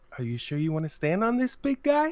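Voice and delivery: high, sugary, super sweet, coaxing put-on voice. Recounting how she spoke to him: imitating a super sweet voice. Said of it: "she put on like that voice".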